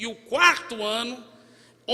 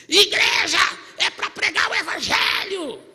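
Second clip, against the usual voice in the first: put-on loud, high, furious yell full of hatred; 8 semitones higher, 5 dB louder than usual. Retelling a man shouting down the church corridor, imitating an angry shout. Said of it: "E ele gritando".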